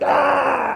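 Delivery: loud, shouted, growling scary demon voice.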